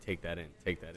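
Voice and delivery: soft, quiet, low murmur.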